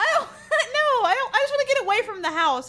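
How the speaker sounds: high, laughing protest, words laughed out.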